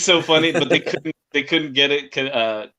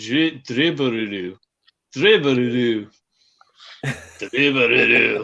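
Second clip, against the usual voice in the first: put-on, harsh Japanese accent, slowed; 3 semitones lower than usual. Imagining a tough word said in a harsh Japanese accent. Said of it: "with a harsh Japanese accent".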